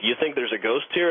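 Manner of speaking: normal talking voice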